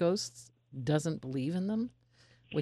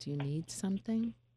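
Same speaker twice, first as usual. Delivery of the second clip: put-on motherly, mommy-like voice; 4 semitones higher, 3 dB quieter than usual. Retelling speaking to an upset unseen presence, in a put-on mommy voice. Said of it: "I got my mommy voice on".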